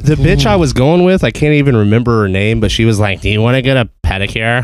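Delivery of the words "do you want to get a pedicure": growling bog-creature swamp monster voice. Retelling what a prom date asked, quoting her in a swamp monster voice. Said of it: "you made her just sound like a swamp monster".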